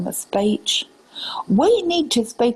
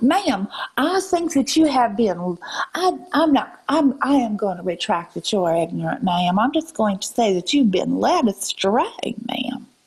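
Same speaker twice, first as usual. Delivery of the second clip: fake Southern drawl, deliberately put on. Answering someone while keeping up a put-on Southern accent. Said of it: "I won't stop doing this Southern accent".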